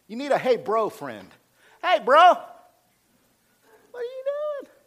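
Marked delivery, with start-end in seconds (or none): 1.9-4.7 very high, slow, drawn-out falsetto. Showing how a bro friend can check on you: high falsetto voice. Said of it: "You can even use that falsetto voice like that".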